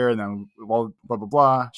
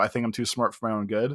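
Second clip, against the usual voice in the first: normal talking voice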